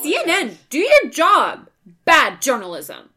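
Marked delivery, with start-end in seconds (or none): 0.0-1.7 put-on very loud, high, swooping childlike yelling voice. Reading a politician's tweets in a childlike voice, as a joke: childlike Shatner voice reading Trump tweets. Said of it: "That's the voice that I read all of Donald Trump's tweets in".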